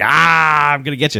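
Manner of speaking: gleeful, delighted, playful menacing tone. Retelling a movie scene, voicing the whip-swinging attacker: imitating a gleeful villain. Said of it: "he's super gleeful at this point".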